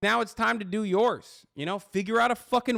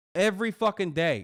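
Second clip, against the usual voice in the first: normal talking voice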